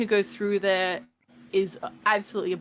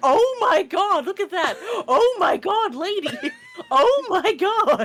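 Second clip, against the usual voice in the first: very high, loud, animated, swooping exclaiming; 12 semitones higher, 5 dB louder than usual. Telling a friend how they reacted while watching a movie, mimicking loud exclaiming. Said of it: "you were like".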